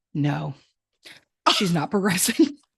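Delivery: tired, weary, sighing voice. Retelling a doctor's answer during labor: imitating a sighing doctor. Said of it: "sighs and goes".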